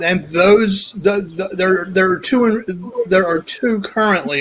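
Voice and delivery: halting stutter, repeating words. Speaker about to share something rarely shared with people, stuttering. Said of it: "I'm stuttering".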